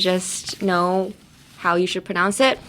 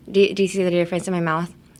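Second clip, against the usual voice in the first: normal talking voice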